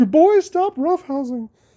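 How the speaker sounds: very high, scolding telling-off voice. Recalling hearing their mom's voice about roughhousing, imitating my mom's voice. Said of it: "I can hear my mom's voice".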